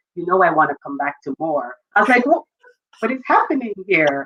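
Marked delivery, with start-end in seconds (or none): 0.2-1.8 whispered, lower pitch. Recalling how daddy leaned in at graduate school, retelling a whisper. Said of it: "He whispers in my ear".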